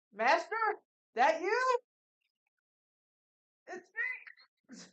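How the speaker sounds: very loud, very high, swooping, unsure yell. Calling out to the master so he can hear, with a questioning yell. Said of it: "but like a questionable yell".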